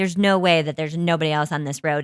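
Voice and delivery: plain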